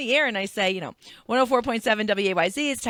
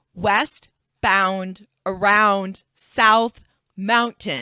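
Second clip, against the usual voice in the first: very slow, deliberate, drawn-out delivery; 4 dB louder than usual. Retelling a caller's traffic report, imitating a caller, said slowly. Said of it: "slow down to tell the story".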